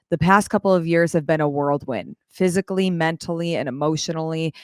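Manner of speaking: usual speaking voice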